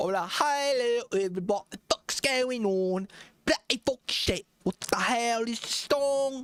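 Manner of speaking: fake London accent, pitched way up. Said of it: "I like to sing in an accent, like a London accent".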